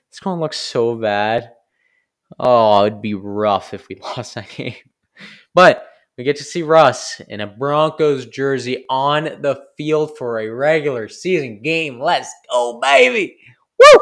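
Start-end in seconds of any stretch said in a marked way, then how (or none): 12.0-14.0 very loud, high, thrilled, excited whoop. Fan cheering about seeing Russ in a Broncos jersey: loud excited shout. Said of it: "Sorry, that was loud".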